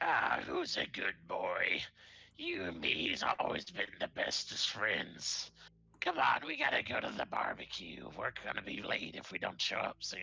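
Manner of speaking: scratchy, rough, creaky goblin voice. Narrator describing a scene to the players, voicing a goblin petting a warg: goblin voice. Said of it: "you see a goblin w- petting a warg, and you just hear".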